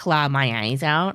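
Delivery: put-on sassy voice. Retelling a scene where Bosa mocks Kima: imitating Bosa sassily. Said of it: "He even says it, like, sassy".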